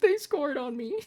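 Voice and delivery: put-on crying. Retelling breaking down while playing FIFA after conceding a goal: imitating own crying. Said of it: "and I'm crying".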